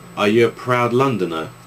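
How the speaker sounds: ordinary talk, nothing marked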